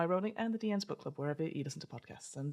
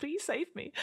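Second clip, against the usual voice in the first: very high, cowardly, sniveling whimper; 10 semitones higher than usual. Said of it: "a sniveling snippy".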